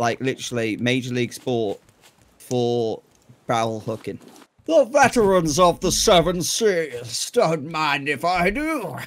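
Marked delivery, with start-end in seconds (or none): 4.7-9.0 slow, put-on seafaring pirate voice. While hooking barrels, the speaker slips into a practiced pirate voice. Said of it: "You've been working your voice".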